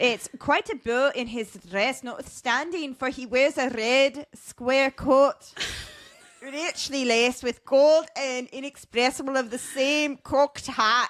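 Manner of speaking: attempted Irish lilt, lifting up in pitch. Reading a quote aloud again after being told they've got it, attempted Irish accent. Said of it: "I feel like an Irish accent has to go kind of up".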